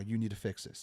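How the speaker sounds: ordinary delivery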